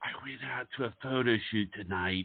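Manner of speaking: really quiet, soft start. Imitating how Barbara begins a complaint: Barbara's really quiet start. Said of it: "She'll start off really quiet".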